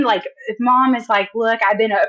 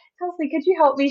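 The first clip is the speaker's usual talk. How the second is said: put-on very calm voice, higher; 7 semitones higher than usual. Retelling how a coworker asked for help: imitating a very calm request. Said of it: "very calmly poked her head out".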